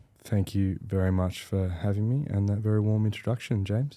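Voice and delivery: flat, dull, underwhelmed, unenthusiastic delivery. A guest thanks the host for his introduction: flat, unexcited. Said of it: "you don't have to sound too excited".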